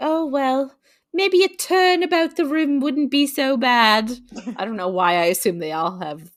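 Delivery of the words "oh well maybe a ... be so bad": coy, higher, badly put-on voice. Acting out Nina being coy, in a horrible put-on coy Nina voice. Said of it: "I know that that was horrible".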